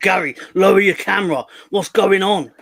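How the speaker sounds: very loud, frantic, flustered, panicked voice. Joking that John is upset about a guest's camera, imitating John panicking. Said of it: "John's having kittens right now because he's like".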